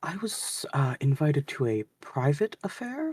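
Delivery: whispered character voice. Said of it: "whispers and goes".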